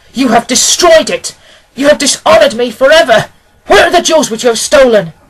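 very loud, high, furious, enraged shouting. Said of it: "I shouted, beside myself with rage".

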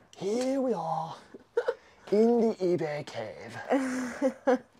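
badly done, very high, very slow voice. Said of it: "That was pretty bad".

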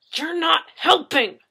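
speaking with clenched teeth. The narrator answers a companion's remark in front of a superior: through gritted teeth. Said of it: "I shot at them through gritted teeth".

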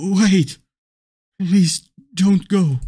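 very loud, trembling, shaking, frightened voice. Begging the woman you love not to leave, in a shaking, scared voice. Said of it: "Your voice is shaking like a scared child's".

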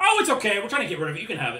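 loud, swooping acted character voice. Game master voicing the quartermaster who offers players a box, quartermaster character voice. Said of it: "the quartermaster".

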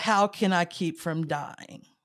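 ordinary talk

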